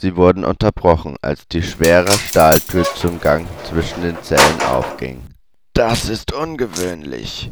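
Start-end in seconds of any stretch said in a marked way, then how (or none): 5.7-7.5 soft, muttered murmur under the breath. Narrator reading a character's remark as a heavy steel door opens, murmured. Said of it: "murmelte Ignatius".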